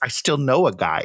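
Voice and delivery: mock childlike wonder, hushed delight. Recounting Benjamin Bratt's line in a movie, imitating his childlike wonder. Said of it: "he says it with childlike wonder".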